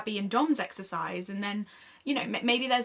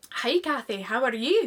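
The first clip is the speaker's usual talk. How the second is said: put-on Scottish accent. Reading a script scene with a friend, playing the Scottish heroine: Tanya's Scottish accent. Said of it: "Do the accent".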